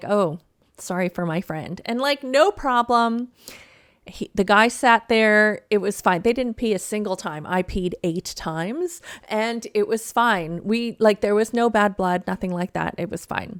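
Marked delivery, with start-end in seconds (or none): 0.0-1.8 put-on sheepish, embarrassed voice. Retelling a fellow passenger's apology: imitating someone sheepish. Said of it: "a little embarrassed and kind of, like, sheepish".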